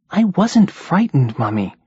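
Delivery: small, high, indignantly protesting voice. A child protests to his mother that he wasn't scared, in a small, indignant voice. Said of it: "came a small, indignant voice".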